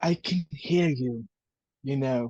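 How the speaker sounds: low, theatrical stage whisper. Playing a smug character who overhears others talking about him: stage whisper. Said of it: "he also stage whispers".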